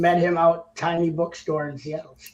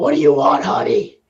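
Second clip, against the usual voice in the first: put-on loud, ninety-year-old chain-smoking waitress voice; 3 semitones lower, 6 dB louder than usual. Joking about a hoarse voice, playing an old smoking waitress: ninety-year-old smoking waitress voice. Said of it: "like a ninety-year-old waitress who's smoking a cigarette".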